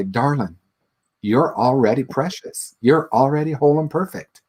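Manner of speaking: put-on beautiful-sounding Southern accent. Quoting the first teacher's spiritual teaching: imitating a teacher's Southern accent. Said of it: "she has had this beautiful Southern accent".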